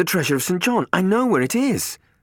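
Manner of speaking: high, loud, breathless gasping, pitched way up. Matt at Robin's door, telling her his news, gasping. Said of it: "he gasped".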